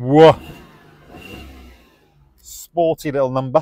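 loud, drawn-out, dripping sarcastic exclamation. Revving the engine during a car walkaround: sarcastic exclamation. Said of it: "I don't know if you can detect the sarcasm in my voice".

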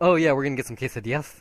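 suddenly affected, loud, rushed Spanish accent. Mocking someone who suddenly puts on an accent for a word, put-on accent. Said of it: "all of a sudden puts on like an accent".

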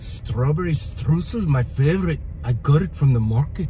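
playful put-on Scottish accent. Speaker demonstrating a line for a partner to copy: scottish accent. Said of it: "it's just a Scottish thing".

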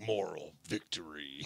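low, dramatic arcade fighting-game announcer proclamation. Joking about the phrase, saying it like Mortal Kombat announcer voice. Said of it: "you could say it like Mortal Kombat".

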